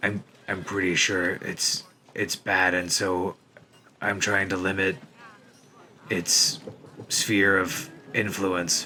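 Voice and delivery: slow, hushed, in-character whisper. Whispering in character to Evelyn about a bad shield: whispering in character. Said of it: "I'm gonna whisper to Evelyn".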